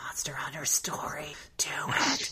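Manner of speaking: drawn-out, slow, soft whisper. Retelling how Apps calls up while they sleep: imitating Apps whispering. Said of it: "Apps just whispering".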